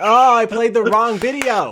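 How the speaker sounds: exasperated outburst. Realizing they played the wrong video while recording: frustrated. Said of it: "I'm so frustrated".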